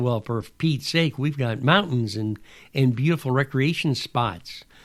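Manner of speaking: normal talking voice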